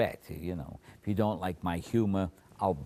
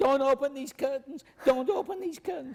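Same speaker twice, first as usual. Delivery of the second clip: play-acted high screaming, said repeatedly; 4 dB louder than usual. Retelling how the compere reacted as the curtains opened: imitating someone screaming. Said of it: "And he screamed".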